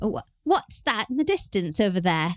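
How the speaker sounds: put-on casual British accent. Act out a British buddy asking about something in the distance, in Thomas's British accent. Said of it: "he's British, and I'm not going to do a British accent".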